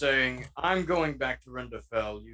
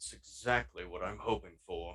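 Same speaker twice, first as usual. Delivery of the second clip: very low, quiet mutter under the breath; 7 semitones lower, 9 dB quieter than usual. Voicing Godfred replying to the party: muttered under the breath. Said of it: "Under, uh, Godfred's breath, uh, he says".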